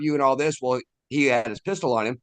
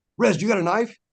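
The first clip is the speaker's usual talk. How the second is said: put-on panicky, urgent, high-pitched delivery; 8 semitones higher than usual. Retelling what a friend said while searching: imitating a panicked friend. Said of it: "He's panicking, panicking, panicking".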